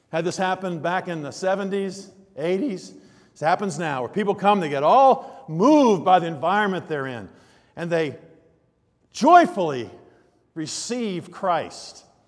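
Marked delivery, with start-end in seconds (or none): 3.3-12.0 mocking, very sarcastic tone with sing-song swings. Speaking about people who receive Christ at services, very sarcastic. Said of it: "I'm saying that very sarcastically".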